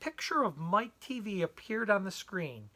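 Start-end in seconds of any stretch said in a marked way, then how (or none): none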